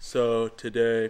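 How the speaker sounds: low, flat, lifeless robotic monotone. Imitating a man who looks like a robot and talks monotone, flat robotic monotone. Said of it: "he is seriously looks like a robot and he's all monotone. He's like".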